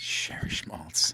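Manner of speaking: hushed voice. Acting out a scene in the middle of the night: quiet voice. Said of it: "all of a sudden a quiet Irish person".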